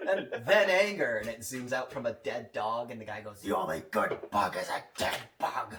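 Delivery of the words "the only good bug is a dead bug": mock, as angry as possible, low-pitched. Quoting a man in a propaganda video, imitating an angry man. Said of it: "in like the most angry way he can".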